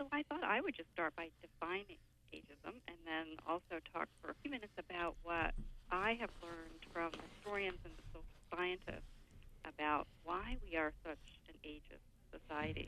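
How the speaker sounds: speaking too quietly. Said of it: "I think we need you to speak louder".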